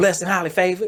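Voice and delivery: play-acted angry, irritated tone. Retelling a greeting answered on the street: imitating someone sounding angry. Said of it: "sound like you angry. You mad at me".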